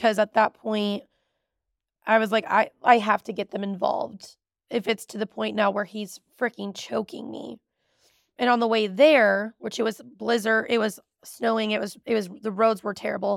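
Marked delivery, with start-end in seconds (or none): none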